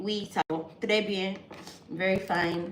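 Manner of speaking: ordinary talk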